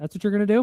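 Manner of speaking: subtle doubtful tone. Imitating a friend's subtle way of doubting a plan: imitating Joe's subtle doubt. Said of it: "And he'll go".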